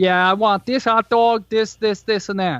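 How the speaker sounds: put-on Chicago accent. Retelling how the speaker ordered at a hot dog counter, in a chicago accent. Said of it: "went into your Chicago accent just for the order".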